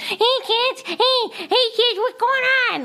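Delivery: mock scary vocoder clown voice. Retelling how a farmer's-market clown greeted kids, imitating its terrifying vocoder voice. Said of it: "it had this fucking terrifying voice".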